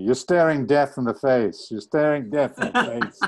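urgent, loud, high-pitched repeated shouting. Retelling what the man behind the Steadicam shouted on the escalator: retelling someone's shout. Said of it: "And he's shouting at me".

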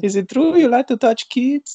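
bad put-on South American accent, very high. Voicing an imagined child from the Isle of Guacamole: awful South American accent. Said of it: "incoming awful South American accent".

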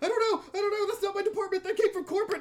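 very high, shrill, panicky, frantic hysterics. Retelling what a guy answered when asked, retelling a frantic, hysterical answer. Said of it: "sort of frantically and hysterically".

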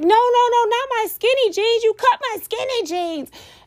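acted, high upset yell, not stretched out. Retelling yelling at firefighters cutting the speaker's jeans after a crash, retelling a yell. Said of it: "I'm yelling".

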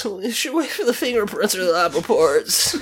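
tearful trembling voice. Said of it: "weepy ass little wavery voice".

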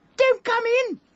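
very high, shrill, frightened, nervous squeak. Recounting the voice from behind a locked door: imitating a high nervous squeak. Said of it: "someone inside squeaked out".

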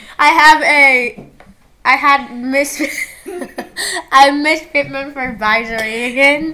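giggling, stumbling over words while laughing. Listing teachers while unable to stop laughing: laughing while talking. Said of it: "I don't know why I'm laughing so much".

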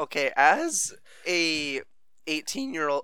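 cracking, breaking voice. Speaker starting an answer in a discussion, voice cracking. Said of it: "Oh, f***, voice crack".

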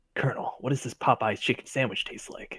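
breathy, hushed, whispered soldier voice. Speaker joining the group bit, in a shitty Solid Snake impression. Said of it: "doing like shitty solid snake impression".

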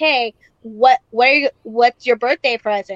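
put-on creepy voice. Retelling own question to a scared man: imitating a creepy voice. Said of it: "all creepy".

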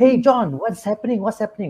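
heated irritated tone. Showing how someone sounds when very angry, in an angry tone. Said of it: "like when you're very angry, you're like".

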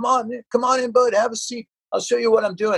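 put-on touch of Southern accent, pitched very high. Recalling being welcomed into the studio, imitate Shane's slight Southern accent. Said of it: "He had a little bit of a Southern accent".

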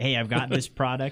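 plain

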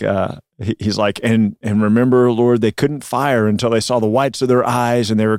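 ordinary delivery

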